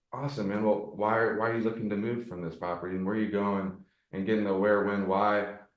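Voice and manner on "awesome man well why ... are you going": genuinely curious, interested, inquisitive tone. Showing a follow-up question on a cold call: curious tone. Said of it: "the curious tonality".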